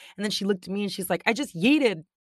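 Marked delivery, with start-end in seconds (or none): 1.3-2.0 all worked up, thrilled, loud and excited. Retelling what another mom said after pushing her son in the pool: imitating someone excited. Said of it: "All excited".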